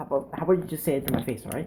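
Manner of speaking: fast, soft rattled-off impression. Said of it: "talk a little faster".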